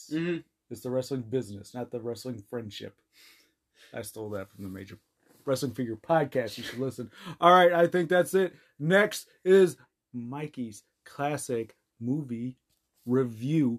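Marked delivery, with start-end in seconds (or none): 8.8-13.8 very slow, deliberate, every word stretched. Introducing the next segment of the show, said really slowly. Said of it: "I said that really slow".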